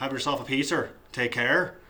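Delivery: casual speech in a Northern Irish accent. Comparing how people talk across ireland: northern irish accent. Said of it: "you go over to Northern Ireland, talk a little bit more like that".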